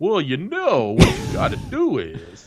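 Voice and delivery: high put-on voice with wide, swooping pitch. Joking about needing a relationship counselor: Doctor Phil impression. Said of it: "that was my Doctor Phil".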